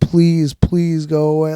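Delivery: acted pleading tone. Speaker recalling being high far too long, retelling own begging. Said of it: "Like I'm just begging".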